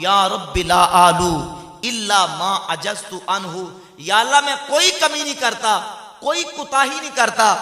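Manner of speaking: ordinary talk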